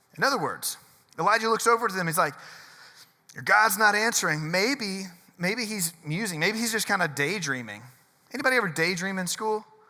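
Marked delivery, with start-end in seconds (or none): none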